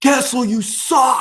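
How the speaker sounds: very high, shrill, jeering yell. Retelling how a fan in the crowd heckled kessel: imitating a fan yelling. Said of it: "a guy who was yelling at Kessel".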